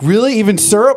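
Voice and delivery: very high, squeaky, excited gushing. Imitating Celestia, who is all excited about the gargling: imitating an excited Celestia. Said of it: "She's like".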